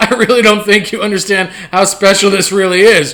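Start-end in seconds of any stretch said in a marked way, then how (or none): none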